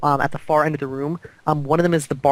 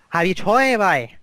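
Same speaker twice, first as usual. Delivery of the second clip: bad, amateur, put-on Scottish accent; 3 semitones higher than usual. Voicing a character asking a player a question: poor scottish accent. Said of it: "I apologize for my po-, my poor Scottish accent".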